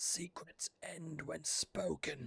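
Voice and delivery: faint, raspy, hoarse, soft, barely-there voice. A voice speaks from a new crack in the wall, faint and hoarse. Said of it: "A faint voice. A hoarse voice".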